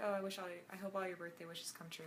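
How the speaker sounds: ordinary talk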